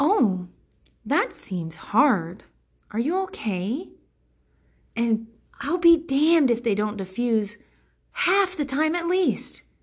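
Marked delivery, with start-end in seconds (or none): 0.0-3.9 put-on slow, coddling toddler talk, as to a small child. Showing how to answer someone's complaint: talking like to a toddler. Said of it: "talking to them like they're fucking toddlers".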